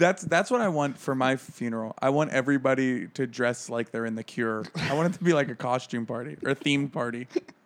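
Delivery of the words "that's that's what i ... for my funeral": usual speaking voice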